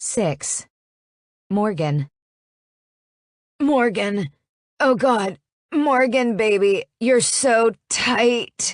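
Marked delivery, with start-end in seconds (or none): 3.6-8.7 slow, nasal drawl, voice pushed through the nose. Reading a story aloud, voicing his line to Morgan: nasal voice. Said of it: "His voice is nasally".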